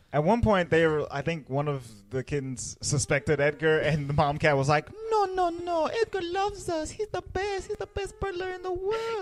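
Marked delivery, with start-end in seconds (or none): 5.1-9.2 put-on Mexican accent. Retelling a story, voicing the mother cat defending Edgar to a kitten: Duchess with put-on Mexican accent. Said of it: "a little like Duchess Mexican lady".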